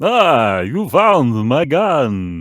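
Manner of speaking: put-on loud, big, swooping vampire accent. Mocking how a Star Trek character's accent is played, Count Dracula accent. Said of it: "a Count Dracula accent".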